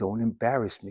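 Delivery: put-on very quiet, low, hushed threatening tone. Recalling a mother warning her kids in the car before dinner, mimicking her threatening tone. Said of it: "in that threatening tone".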